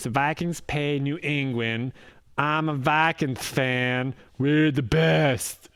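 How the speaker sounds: acted talking through a mouthful, fan drawn out. Mocking the other speaker, who has a mouthful of sandwich, imitating talking with mouthful. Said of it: "is that what I sound like?".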